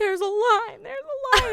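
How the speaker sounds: put-on high-pitched yelling. Retelling how people waiting in line shouted at the speaker: imitating people screaming. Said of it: "everybody starts screaming at me".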